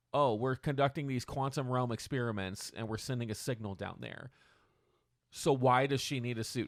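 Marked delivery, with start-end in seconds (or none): none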